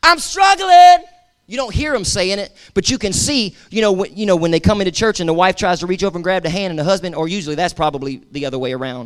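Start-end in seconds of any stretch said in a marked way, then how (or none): 0.0-1.0 high, slow, anguished desperate cry. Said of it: "people have been screaming out".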